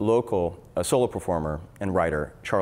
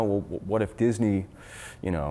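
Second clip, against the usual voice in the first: ordinary talk, nothing marked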